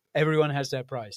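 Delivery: normal talking voice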